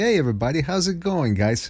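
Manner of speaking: over-the-top flamboyant voice, pitched high.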